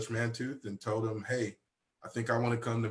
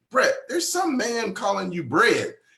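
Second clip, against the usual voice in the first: very high, very loud, swooping shrill scream; 10 semitones higher, 10 dB louder than usual. Retelling his mom calling out about a man's phone call, imitating her scream. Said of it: "she'd scream out".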